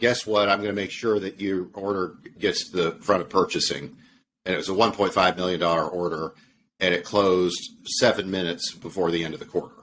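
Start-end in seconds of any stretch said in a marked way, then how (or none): none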